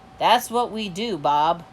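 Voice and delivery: ordinary delivery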